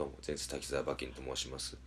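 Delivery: dejected, deflated tone.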